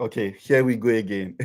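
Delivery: ordinary delivery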